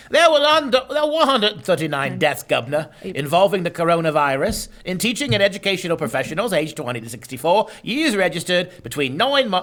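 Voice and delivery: affected, put-on English accent. Reading death statistics aloud to sound more serious: put-on english accent. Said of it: "we have to say it in an English accent".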